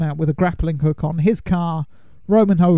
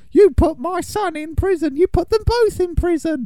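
put-on high-pitched, heavily laid-on Cockney accent; 14 semitones higher than usual. Act out the villain's mother in Fast and the Furious as Helen Mirren, properly Cockney accent. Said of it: "She's putting on a properly Cockney accent".

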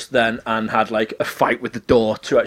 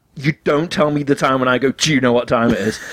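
usual speaking voice

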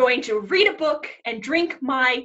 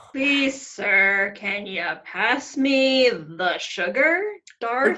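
barbed, snide politeness, sneering on one name; 3 semitones lower than usual. Told to ask politely for the sugar, asking Darth in a snarky way. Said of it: "that felt real snarky".

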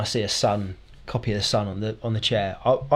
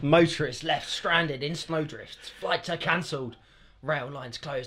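fake exaggerated dramatic voice, higher and quieter; 5 semitones higher, 5 dB quieter than usual. Reading headlines aloud for a joke: put-on big over-the-top voice. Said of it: "[name] bigged that up with The Voice".

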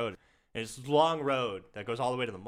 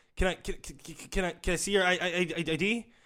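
put-on stuttering speech, higher; 7 semitones higher than usual. Retelling a store clerk asking for ID: imitating a stutter.

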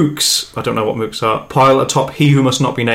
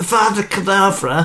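put-on high-pitched, frail, feeble old-man voice; 8 semitones higher than usual. Attempting a film character's line for the others, in a feeble old man voice. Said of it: "That sounds like feeble old man".

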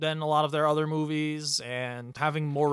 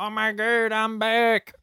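loud, high-pitched, belted exclamation; 8 semitones higher, 6 dB louder than usual. Joking about a movie character coming back from the dead, doing a Madea impression. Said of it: "That's my Madea impression".

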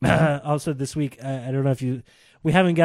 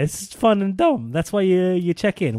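breaking, cracking voice mid-line; 4 semitones higher than usual. Chatting with someone about a monster-battle video, voice cracking. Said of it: "Why'd my voice crack?".

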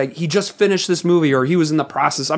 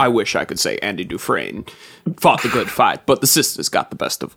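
very low, deep put-on voice; 8 semitones lower, 3 dB quieter than usual. Doing a Shawshank Redemption line as a Morgan Freeman impression. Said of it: "this is me doing Morgan Freeman in The Shawshank Redemption".

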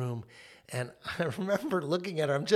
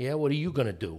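put-on defiant toddler voice, fake Bronx accent, faster. A parent recalls their firstborn toddler defying discipline, voicing her defiant with a Bronx accent. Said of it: "she looked at me like".

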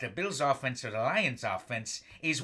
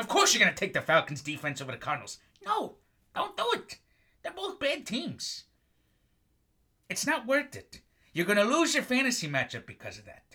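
mildly irritated, a little angry, pitched up; 5 semitones higher than usual. Fantasy football podcaster giving advice on a matchup, a little angry. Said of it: "I'm sorry I'm a little angry".

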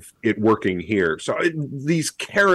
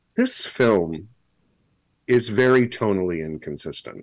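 ordinary delivery

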